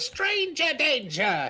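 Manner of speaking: shrill, very high screech through a megaphone. Voicing a gnome who screams into a megaphone: screaming into a megaphone. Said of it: "he's going to scream".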